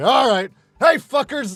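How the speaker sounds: very loud, high, offhand shout. Recalling taking over the yelling at the house they worked at, reenacting a yell. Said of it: "when he didn't feel like yelling at anybody".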